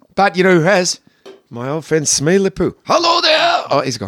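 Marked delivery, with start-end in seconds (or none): 2.9-3.7 very high-pitched, cartoony cartoon-character voice. Having a made-up friend say hello: Foghorn Leghorn voice.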